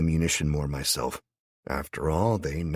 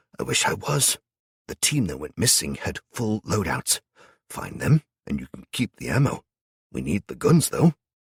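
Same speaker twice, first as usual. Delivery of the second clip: gruff, weary, abrupt growl; 2 semitones higher than usual. Barry answers the narrator's whispered shock, abrupt, growling and tired. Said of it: "[name] said abruptly. / [name] growled, / looking tired".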